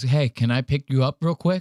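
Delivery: very gentle, tender, soft tone. Retelling how a guy asks a girl so the other guys won't hear, imitating the softest voice. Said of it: "In the softest voice".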